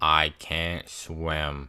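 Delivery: low, put-on flat deadpan monotone, "swim" drawn out. Telling a story, quoting Ben as he speaks, in the most monotone voice. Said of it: "in the most monotone voice".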